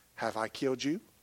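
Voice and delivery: put-on soft tone. Speaker quotes what he would say to remind them, retelling a soft reminder. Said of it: "softly remind me".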